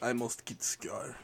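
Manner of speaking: soft, put-on Russian accent on every word. Quoting a character's line, in a put-on Russian accent. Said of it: "Why is he Russian?".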